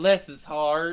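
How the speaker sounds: deep, proper Southern US accent. Showing the others the proper Southern way to say it about a kid: proper Southern accent. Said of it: "You gotta say it the proper Southern way".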